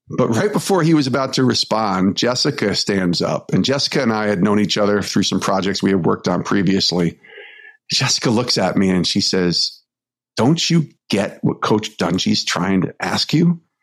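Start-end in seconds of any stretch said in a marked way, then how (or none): 10.4-13.6 imitated stern scolding voice. Retelling a coworker's question, imitating a scolding stern mom. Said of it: "like a stern mom who's upset".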